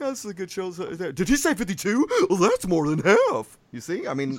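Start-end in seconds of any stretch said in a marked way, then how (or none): 0.1-3.6 astonished, shocked voice with swooping pitch. Show host imagines listeners reacting to the show, in a shocked listener voice. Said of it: "I imagine people like listening and reacting to the show like that".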